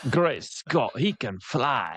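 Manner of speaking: proper put-on British accent. Retelling the story, say Bagman's line in a good accent. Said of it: "You can say it in a you know good accent".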